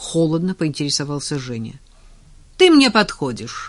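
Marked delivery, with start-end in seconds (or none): 2.6-3.7 cheeky, unabashed, brazen, impudent tone. Nadya answers Zhenya's cold question, brazenly declaring. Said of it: "нагло заявила Надя".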